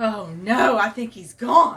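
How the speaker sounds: loud, slow, dismayed cry.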